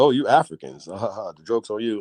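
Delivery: mock jeering, slow, laughed through. Retelling how a man laughed at the speaker's group, retelling a man laughing. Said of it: "he was laughing like".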